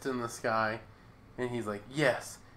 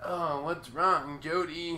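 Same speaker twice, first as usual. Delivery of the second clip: put-on slow, elderly old lady voice; 3 semitones higher than usual. Retelling a scene where a woman suddenly has an old person voice. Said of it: "she has the voice of an old person now".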